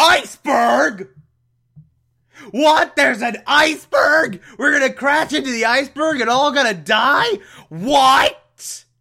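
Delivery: high, loud panicked yell.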